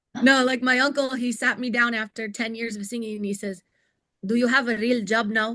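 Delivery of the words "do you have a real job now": put-on Lebanese accent. Speaker retells what their uncle said to them, in a Lebanese accent. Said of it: "in his in his Lebanese accent".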